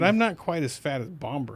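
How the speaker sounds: plain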